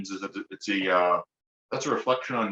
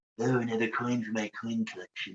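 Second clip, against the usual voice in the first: hushed, soft, murmured nerdy character voice; 6 dB quieter than usual. Playing his nerdy coin-collecting character, who talks kind of like Mr. Burns. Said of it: "he talks kind of like Mister Burns".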